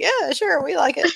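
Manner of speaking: very high, reluctant, unconvinced, half-hearted tone. Voicing townsfolk asked if they like the motto: unconvinced, reluctant agreement. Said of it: "they all shake their heads like".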